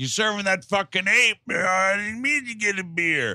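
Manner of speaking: acted-out mock yelling. A speaker imagines a man at a bar, imitating him yelling at the bartender. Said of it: "he's yelling at the bartender".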